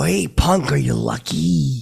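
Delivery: slow, deliberate, drawn-out tough drawl with a swooping swing. Retelling doing an impression at an event: Clint Eastwood impression. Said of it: "I start doing that to Clint".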